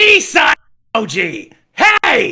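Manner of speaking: very loud. Reading a stranger's chat message aloud, very loud. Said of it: "You can't go that loud".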